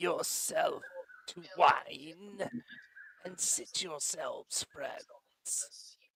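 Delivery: rasping, dry-throated voice. Narrator voices a masked figure welcoming the friends, in a dry, raspy voice. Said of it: "Even the person's dry, raspy voice".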